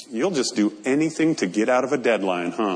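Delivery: put-on grave, solemn, straight deadpan, very low. Retelling what a man replied when asked to come in saturday, imitating a solemn voice. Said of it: "in an equally solemn voice".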